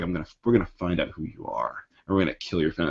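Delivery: grand, epic, long-winded, threatening villain voice. Retelling a comic scene where Electro threatens Spider-Man: imitating Electro's epic monologue. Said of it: "It's like this big, long, epic monologue".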